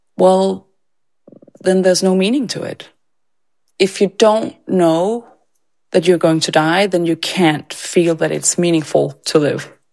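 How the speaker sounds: mock deadpan delivery. Speaker retells a twelve-year-old's answer to them, imitating a deadpan reply. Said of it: "like deadpan".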